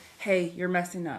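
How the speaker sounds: ordinary delivery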